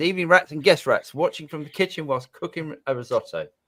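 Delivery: ordinary delivery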